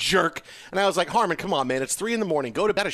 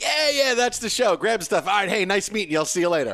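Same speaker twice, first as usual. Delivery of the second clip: put-on offhand, dismissive, hurried and cut short; 2 semitones higher than usual. Retelling how someone brushed him off: imitating a dismissive man. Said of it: "That's a really good impression".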